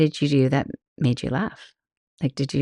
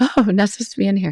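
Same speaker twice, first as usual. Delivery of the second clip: mock caught-off-guard little gasp, pitched up; 6 semitones higher than usual. Retelling walking into the wrong restroom: retelling a startled gasp. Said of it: "I just did some little gasp".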